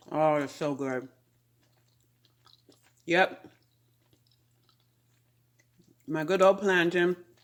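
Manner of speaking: muffled speech, chewing with mouth full. Vlogging while tasting her plantain, the speaker talks with her mouth full. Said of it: "mouthful of food".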